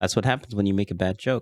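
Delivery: ordinary talk, nothing marked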